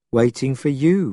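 usual speaking voice

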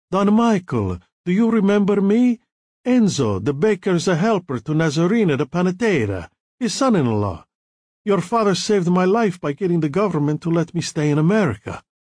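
put-on heavy Italian accent, laid on thick. Narrator reads a young baker's helper stopping a man to greet him: Enzo's heavy Italian accent. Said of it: "saying in a heavy Italian accent".

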